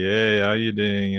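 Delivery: relaxed, lazy, laid-back Afrikaans accent. Explaining how Afrikaans sounds, the speaker demonstrates a lazy Afrikaans accent. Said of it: "It's like a kind of a lazy".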